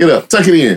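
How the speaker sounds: no-nonsense tough tone. Recalling how elders talked to young boys who got hurt, imitating elders telling boys off. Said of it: "That's how they be telling us".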